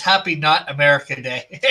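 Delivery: normal talking voice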